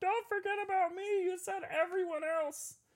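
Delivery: put-on squeaky toy voice, pitched way up high. Speaker voices the Scarecrow figure sitting in the box beside them, Scarecrow voice. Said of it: "that was my Scarecrow voice".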